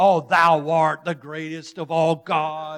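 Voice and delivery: deep, booming, put-on preacher voice. Retelling a fancy prayer of thanks to god, in a put-on preacher voice. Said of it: "you get your preacher voice on".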